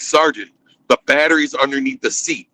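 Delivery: normal talking voice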